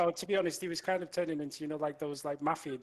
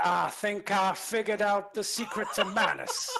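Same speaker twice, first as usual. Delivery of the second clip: put-on cowboy accent, loud and high; 5 semitones higher, 5 dB louder than usual. Asked to read a line with a cowboy accent, the speaker reads in a cowboy accent. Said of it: "We need a cowboy".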